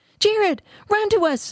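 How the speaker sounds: very high, drawn-out shriek. Narrator reads Nephi calling to Jared as a monster chases him, shrieking. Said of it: "shrieked Nephi".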